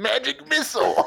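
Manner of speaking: very high, loud, raspy, creaky sorcerer voice. Picturing the fight and imitating the sorcerer casting: imitating the sorcerer casting. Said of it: "and then there's just the sorcerer going".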